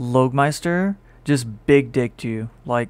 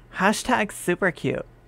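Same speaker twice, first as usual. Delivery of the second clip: put-on female voice, quieter; 6 semitones higher, 4 dB quieter than usual. Gushing over a cute emote with others: put-on female voice. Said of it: "my female voice".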